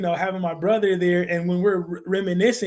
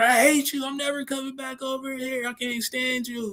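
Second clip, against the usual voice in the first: high-pitched, acted, upset childish tantrum outburst; 6 semitones higher, 3 dB quieter than usual. Retelling fighting with a friend over football: retelling an upset outburst. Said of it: "get upset at each other".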